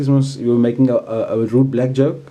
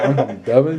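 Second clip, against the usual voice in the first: put-on confused delivery. Mimicking another player's claim in two truths one lie: imitating a confused tone. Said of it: "You sound so confused when you say that".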